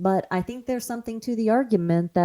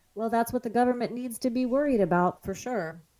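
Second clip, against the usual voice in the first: deadpan, dry, ironic, sarcastic aside; 4 semitones higher, 4 dB quieter than usual. Responding to news about porn declared a health crisis: sarcastic. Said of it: "I hope the sarcasm came through".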